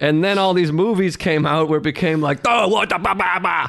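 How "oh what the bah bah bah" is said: broad-sounding Boston street accent, pitched up. Imitating how people started talking after those movies came out, Boston accent. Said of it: "That's a good Boston accent".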